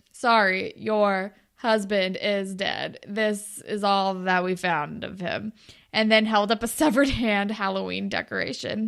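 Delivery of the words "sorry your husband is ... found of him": slow, toneless, dead monotone reading. Retelling a friend's brother reading the messenger's script line: incredibly monotone reading. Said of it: "He read incredibly monotone off the script".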